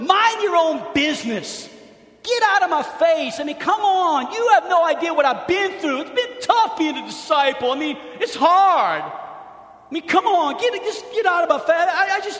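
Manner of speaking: high, pleading, sympathy-seeking voice. Acting out Peter's denial in a sermon, imitating Peter pleading. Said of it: "You can almost hear the pleading in his voice".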